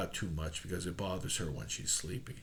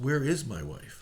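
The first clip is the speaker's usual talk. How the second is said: ordinary delivery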